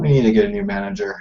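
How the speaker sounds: low, muttered under the breath. In a role-play, a player's character speaks so two others can hear, muttering under breath. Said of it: "mutter under my breath".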